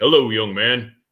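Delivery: booming, very loud, full-volume, grand delivery. Retelling the president greeting a man in a wheelchair: imitating a booming voice. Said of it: "with his booming voice, he's like".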